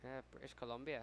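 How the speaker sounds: quiet put-on English accent, under the breath. Baseball commentator slips into an accent saying a place name: English accent. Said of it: "That was that was an English accent".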